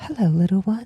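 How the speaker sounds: breezy, airy put-on voice. Narrator voicing a living tree greeting the listener, in a soft, breezy voice. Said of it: "a soft, breezy voice that I don't know if I could can manage".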